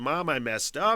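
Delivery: sobbing, crying through the words. Retelling a phone call from a daughter: imitating a sobbing daughter. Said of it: "and sobbing and crying".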